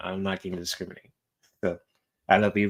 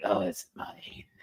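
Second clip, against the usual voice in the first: creepy, breathy whispered voice; 7 dB quieter than usual. Redoing own earlier line after apologizing: imitating own creepy voice. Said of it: "Sorry if you heard that kinda creepy ass voice".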